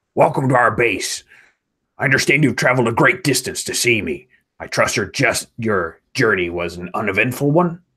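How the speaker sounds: put-on alien commander voice. Voicing the Mon Calamari commander welcoming the messengers: Mon Calamari voice. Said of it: "a Mon Calamari impression as Tomer".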